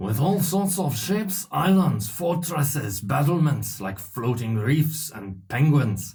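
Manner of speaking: put-on French accent. Reading a passage aloud in a French accent. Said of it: "Can I do a French accent?".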